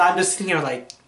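ordinary talk

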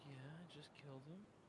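very quiet, level, calm whisper. Imitating a teammate's quiet calm way of talking: imitating Bernie's quiet calm voice. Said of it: "quiet, calm Bernie".

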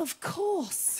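tiny, little, hushed whispered voice. Speaker retelling how someone at the back of the room answered, little quiet voice. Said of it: "I just heard this little quiet voice go".

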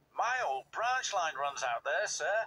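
plain reading voice

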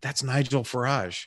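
voiced stage whisper. Retelling what someone said on walking into the green room: imitating someone half-whispering. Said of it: "she whispers".

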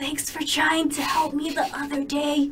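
in a whisper. Narrating a story, a character who sat at your table thanks you; whispering. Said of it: "Lower voice into a whisper".

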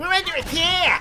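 nerdy voice, very high and loud. Told by another player to repeat the warning, the speaker uses a nerd voice. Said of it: "you gotta say we're under attack in your nerd voice".

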